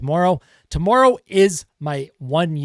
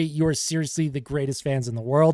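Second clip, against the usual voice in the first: usual speaking voice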